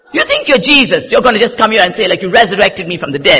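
play-acted furious, high, loud, angry. Retelling an angry reply to the laughing pastor: retelling an angry retort. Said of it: "so angry with him".

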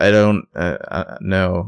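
very slow, dazed, stumbling, halting mumble. Retelling a scene where Spencer answers Ezra: imitating Spencer sounding dazed. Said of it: "she's very out of it".

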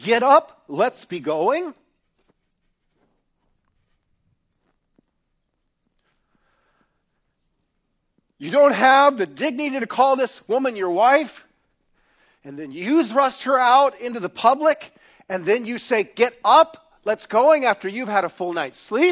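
furious, violently angry, very loud tirade-like shouting. Speaking to an audience about a man in a story, violently angry. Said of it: "I start to get like violently angry".

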